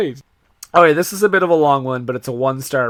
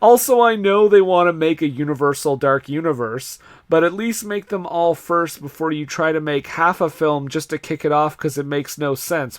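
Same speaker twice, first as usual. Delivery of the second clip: ordinary delivery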